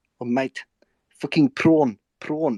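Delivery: loud, high put-on South African accent. Trying out a south african accent after listing film accents: attempted south african accent. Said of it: "I was gonna give it a go. South African".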